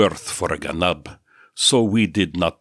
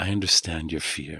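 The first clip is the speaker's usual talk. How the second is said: soft, hushed half-whisper under the breath; 6 dB quieter than usual. Yeshu squats beside Andreas, hugging his shoulders, and half-whispers to him. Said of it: "he whispered".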